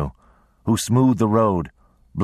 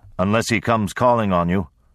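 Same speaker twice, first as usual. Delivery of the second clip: usual speaking voice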